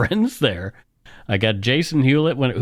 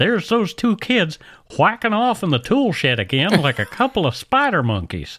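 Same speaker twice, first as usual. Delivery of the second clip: put-on Texan accent, cartoon dad voice; 6 semitones higher than usual. Asked about fake accents, showing off the one voice he can do: Hank Hill impression. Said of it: "I can do Hank Hill".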